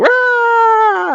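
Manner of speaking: put-on very high, loud toddler scream. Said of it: "she'll just scream at us".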